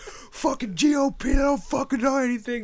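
acted, raging scream, very high and loud. Imagining Stone Cold at an election video, shouting: imitating Stone Cold screaming. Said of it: "just screaming like that".

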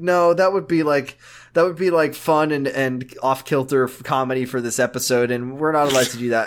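usual speaking voice

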